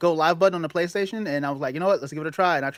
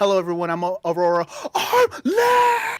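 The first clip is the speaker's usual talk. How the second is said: slow, drawn-out, swooping sing-song, stumbling and stammering; 3 semitones higher than usual.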